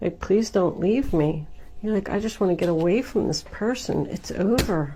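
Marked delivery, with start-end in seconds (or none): 0.2-1.5 put-on pleading, begging voice. Imagining one person pleading with another who wants to leave, mimicking someone begging. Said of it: "somebody's like begging".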